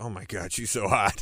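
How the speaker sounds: imitated under-the-breath mutter. Retelling what he said as she walked away: imitating a muttered remark. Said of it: "he went under his breath".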